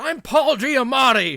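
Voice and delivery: piercing, very high-pitched, very loud bellowing yell. Retelling a car ride, yelling to reveal who the impression was, yelling Paul Giamatti impression. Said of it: "so eventually I yelled".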